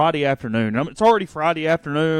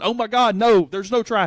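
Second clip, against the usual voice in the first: put-on screaming; 6 semitones higher than usual. Retelling being stuck behind a driver in traffic, the speaker is retelling own screaming. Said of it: "and I'm just screaming".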